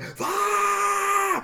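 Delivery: exasperated, very high, drawn-out frustrated yell. Retelling yelling into the phone while a caller was on hold: retelling a frustrated yell. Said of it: "I just yelled "fuck" into the phone".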